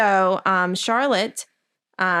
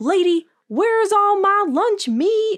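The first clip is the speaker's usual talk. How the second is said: irate, very high-pitched, drawn-out angry voice; 11 semitones higher, 3 dB louder than usual. Retelling a book scene about missing lunch meat: imitating an angry Gary. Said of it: "unreasonably pissed. He's like".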